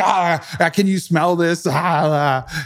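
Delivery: man slowly losing it, long stretched-out ah sounds. Retelling what a passenger said while freaking out: imitating a man freaking out. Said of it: "He was just losing".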